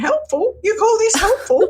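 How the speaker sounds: shrill, very high, loud yell. Recalling a police officer's wife yelling at the men who thought they were helping, imitating someone yelling. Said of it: "I remember her yelling at them saying".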